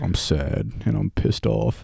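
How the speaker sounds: slow, dull, dragging spoken-word poetry delivery. Imitating own early spoken-word poetry videos: imitating own monotone delivery. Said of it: "monotone as fuck".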